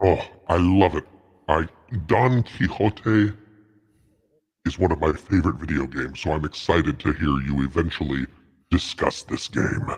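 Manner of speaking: low, seductive, sultry demonic half-whisper. Reading out a supporter's message on the show, sultry devil half-whisper. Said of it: "You like my sultry devil whisper?".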